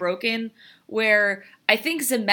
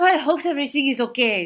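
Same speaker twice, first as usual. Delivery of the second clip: put-on French accent, done properly; 3 semitones higher than usual. Describing a film character with nothing to do, the speaker quotes her in a french accent. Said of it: "She has a French accent".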